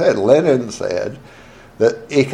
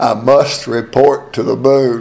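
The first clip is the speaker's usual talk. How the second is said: play-acted grave, dead-serious voice. Retelling a play where a fellow spoke his line, retelling a real serious voice. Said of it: "A real serious voice".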